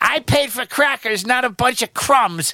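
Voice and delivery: put-on high, whiny, complaining voice.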